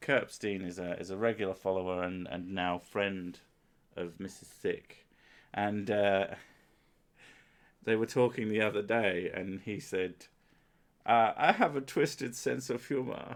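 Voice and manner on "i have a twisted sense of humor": put-on German-accented voice. Quoting Kurt Epstein, a regular follower, in a put-on German voice. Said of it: "This is my German voice".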